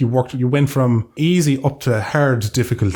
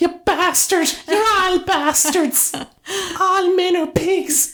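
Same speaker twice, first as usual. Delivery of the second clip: woman's voice pitched very high, outburst. Riffing with a co-host about outbursts, doing a woman impression. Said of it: "That's my woman impression".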